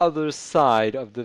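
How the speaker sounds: ordinary delivery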